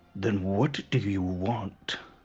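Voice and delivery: slow, drawn-out, growling snarl. Voicing a character who leans in close to a player, snarling. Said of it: "He's he snarls at you".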